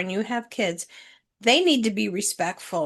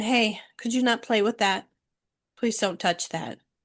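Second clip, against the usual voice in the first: mock-polite, gentle, soft asking tone. Retelling a cashier asking a boy to stop touching the register: retelling a polite request. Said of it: "the cashier politely asked him".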